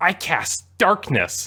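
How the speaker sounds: tongue-in-cheek sarcasm. Retelling how players announced a spell, imitating a sarcastic tone.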